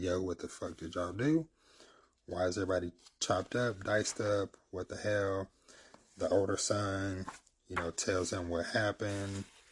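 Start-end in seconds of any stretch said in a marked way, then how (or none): none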